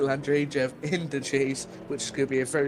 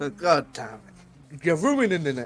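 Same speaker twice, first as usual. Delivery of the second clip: ordinary talk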